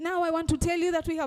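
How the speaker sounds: loud, ill-fitting tone for the mood. A speaker teaching tonal variation shows how not to announce a death: wrong tone for death news. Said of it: "that is not the time you should now speak like this".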